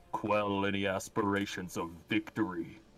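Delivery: solemn, weighty, grave voice, dropped low. Describing a free action in the game: Dirk's serious voice. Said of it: "his serious voice".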